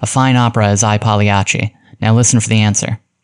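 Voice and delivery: ordinary delivery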